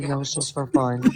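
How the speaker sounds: mock deadpan, flat, toneless, level delivery. Retelling being questioned in cuffs, the speaker repeats a flat reply. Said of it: "just like that".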